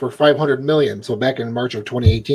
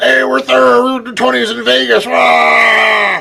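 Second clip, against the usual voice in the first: very high, rough, creaky bro voice, drawn-out "rah"; 9 semitones higher, 3 dB louder than usual. Asking about a voice the other speaker did, imitating a straight guy's voice. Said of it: "that voice you did".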